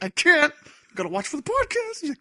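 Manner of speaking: mock whine, very high and loud.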